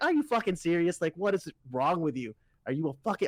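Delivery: mock-angry, put-on angry ranting outburst. Retelling reacting to a guy's remark to Kevin, retelling an angry outburst. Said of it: "I'm so mad".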